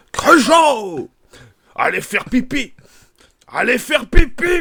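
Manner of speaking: mock gruff military officer voice. Trying an impression for a co-host: Michel Galabru impression. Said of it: "pour l'imitation de Michel Galabru".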